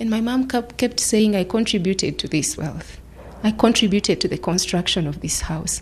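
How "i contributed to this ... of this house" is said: plain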